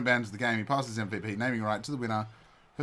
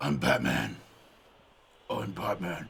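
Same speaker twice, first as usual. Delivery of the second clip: very low, husky superhero rasp; 7 semitones lower than usual. Speaker shows how hard the voice is to do: low husky Batman voice. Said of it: "get that voice because it's like talking in a low voice and making your voice husky".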